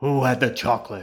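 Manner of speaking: very loud, rough growl. A voice speaks up beside a brother and sister at their table: low growling voice. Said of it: "a low voice growled next to them".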